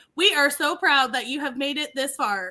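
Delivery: plain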